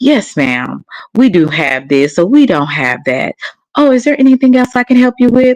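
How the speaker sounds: sweet customer-service voice. Acting out answering a customer's call at work, in a nice customer-service voice. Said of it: "all that niceness and nice voice".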